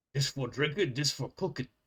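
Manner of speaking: carrying, hushed half-whisper, stage whisper. Voicing a cook leaning to a compatriot: Ogren half-whisper. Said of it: "as quietly as an Ogren can whisper".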